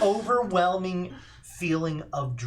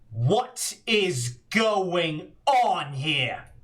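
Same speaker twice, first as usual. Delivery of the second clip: commanding, large voice. The narrator voices an unseen figure behind the players, in a booming voice. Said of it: "you hear a booming voice from behind you".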